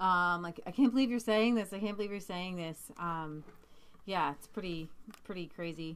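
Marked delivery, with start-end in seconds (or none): none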